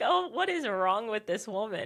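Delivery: put-on appalled, shocked, scandalized, pearl-clutching disapproval. Retelling what a shocked volunteer seemed to think: imitating pearl-clutching shock. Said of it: "she clutched her pearls".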